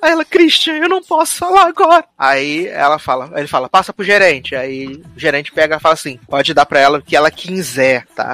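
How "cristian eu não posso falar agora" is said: acted, weepy, high little voice near tears. Retelling what a woman said to Cristian, imitating a tearful little voice. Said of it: "E a vozinha dela tá chorosa".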